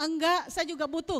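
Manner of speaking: insistent, pushing back hard. Demonstrating to listeners how our own voice sounds, louder voice. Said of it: "Suara kita lebih keras".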